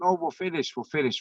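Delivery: high, dismissive, brushing-off shout. Recounting the line for PCR testing, the speaker imitates the people there, mock shouting. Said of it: "your ones there shouting like".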